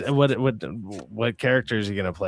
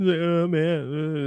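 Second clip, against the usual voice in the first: high, weepy sob, "man" stretched out; 7 semitones higher than usual. Retelling a finale scene where he sits there crying: imitating someone crying. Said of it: "he's just sitting there crying".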